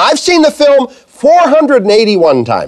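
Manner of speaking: high, swooping, excited and eager bragging tone.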